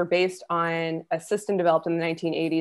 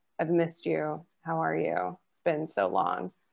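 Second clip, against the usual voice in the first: play-acted flat monotone, no inflection; 5 dB quieter than usual. Acting out how she talks in person: imitating a flat, uninflected voice. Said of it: "resting bitch voice, like no almost no inflection when she's speaking".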